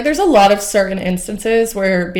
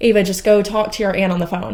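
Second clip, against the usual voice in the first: ordinary talk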